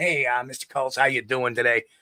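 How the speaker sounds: put-on New York cop-style accent. Imitating how people from new york and new jersey talk: put-on new york accent. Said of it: "They talk with the, the New York accent".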